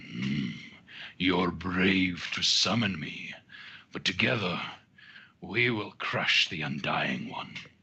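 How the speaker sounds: deep, rumbling, echoing voice. Narrating a game, voicing a summoned presence speaking to a player: rumbling voice. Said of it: "a rumbling voice echoes in".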